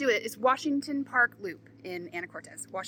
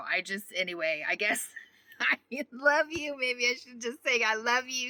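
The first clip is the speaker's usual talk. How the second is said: talking between bursts of laughter, laughing through words; 3 semitones higher than usual. Signing off a video to viewers, laughing while talking. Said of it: "I'm really sorry that I'm laughing".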